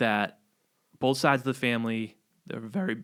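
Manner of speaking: voice cracking. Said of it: "what's wrong with my voice?".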